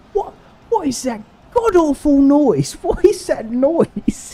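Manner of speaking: acted shrill, piercing, loud, very high-pitched shout. Retelling what a british guy in australia said; retelling a loud shout. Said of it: "this British guy really loud goes".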